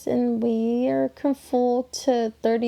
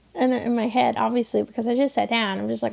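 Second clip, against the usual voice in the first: normal talking voice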